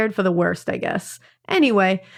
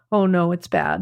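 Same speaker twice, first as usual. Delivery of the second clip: put-on frazzled, anxious mumbling, lower; 3 semitones lower than usual. Retelling what a frazzled child said after a scare: imitating a frazzled mumble. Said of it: "looking particularly frazzled and mumbling something like".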